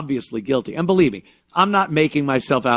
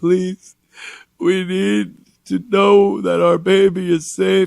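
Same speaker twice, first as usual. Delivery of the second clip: put-on whiny, whimpering voice with sniffles; 5 semitones higher than usual. Retelling the parents' plea on the news, imitating a whiny sniffling plea. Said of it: "They did the whiny voice, the sniffling".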